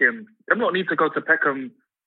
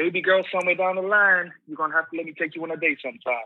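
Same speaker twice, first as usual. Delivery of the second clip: mock laid-back, wavy, smooth-talking flirtatious charm; 4 semitones higher than usual. Retelling a man flirting with a woman on a live stream: imitating his wavy smooth voice. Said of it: "He just sounded so wavy".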